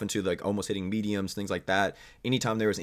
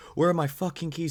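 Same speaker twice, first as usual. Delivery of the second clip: mock high, full-throated scream at top of lungs; 8 semitones higher than usual. Retelling how the driver screamed after the car alarm started: imitating someone screaming. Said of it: "he starts screaming it over and over".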